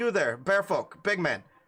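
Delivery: loud, drawn-out, bossy commanding bark. Voicing a woman who snaps her fingers at a bear-folk man: barking orders. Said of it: "barking orders at him".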